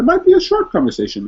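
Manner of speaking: voice pitched very high and loud. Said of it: "my voice went up so high".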